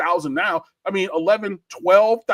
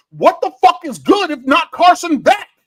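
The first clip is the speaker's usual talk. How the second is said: outright screaming, high and swooping; 9 semitones higher, 7 dB louder than usual. Ranting to podcast listeners, screaming. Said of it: "I'm sorry for screaming".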